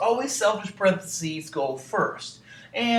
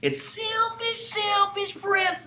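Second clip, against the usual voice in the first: very high, spooky, scary witch-like voice. Teaching the rule for solving problems with parentheses, saying it in a scary witch voice. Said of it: "You got to say it like a, a witch".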